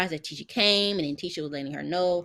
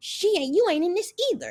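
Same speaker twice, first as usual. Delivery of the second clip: play-acted chipmunk shriek, very high, swooping; 12 semitones higher, 4 dB louder than usual. Retelling how he yelled at someone's mama, imitating Martell screaming like a chipmunk. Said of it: "still screaming to the top of his lungs, sounding like a motherfucking chipmunk".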